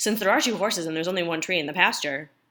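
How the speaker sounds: rushed, rattled-off, too-fast poem reading. Reading the first two stanzas of a poem to listeners, too fast. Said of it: "my first one was too, too fast".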